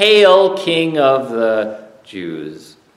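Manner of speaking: mock sarcastic, drawn-out, very slow delivery. Retelling how they bow their knees to him in a cruel play, mock-sarcastic hail. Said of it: "they sarcastically say".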